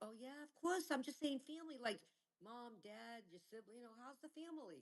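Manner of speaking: high-pitched, flustered backpedaling.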